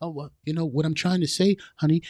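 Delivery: crushed, unnatural, meek and softened man's voice. Imitating a man who can't talk in his regular voice: imitating a man changing his voice. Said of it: "will make a man change his voice".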